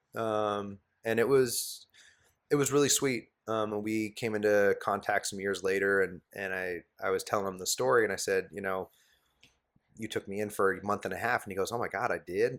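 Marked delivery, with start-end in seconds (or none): 11.8-12.6 put-on thick, heavy Southern accent. Quoting a man who once took the speaker in, as he replies, thick Southern accent. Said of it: "he's got this thick Southern accent".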